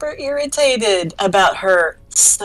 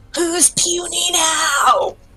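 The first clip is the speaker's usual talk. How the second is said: high, shrill, shrieked battle-cry scream; 8 semitones higher than usual. In a tabletop game, playing Astrid as the troll crumbles, screaming. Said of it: "Astrid is screaming".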